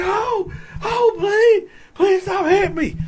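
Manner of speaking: play-acted shrill screaming, very high. Retelling a fight, imitating an officer begging him to stop: imitating someone screaming and begging. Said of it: "screaming at the top of his lungs".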